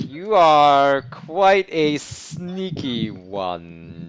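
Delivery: very slow, deliberate demon lord voice. Narrating a game, voicing the Demon Lord addressing a sneaky character, in a slowish Demon Lord voice. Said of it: "says the Demon Lord in his rather kind of slowish voice".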